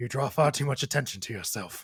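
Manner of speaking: mumbled, muttering delivery. Narrator voices the man in the corner as he's slid a drink, muttering. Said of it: "and he mutters".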